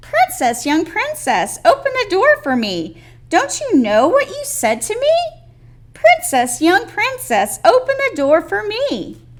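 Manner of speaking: very little, very high calling voice. The frog knocks at the princess's door and calls out: very little voice. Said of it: "a very little voice called out".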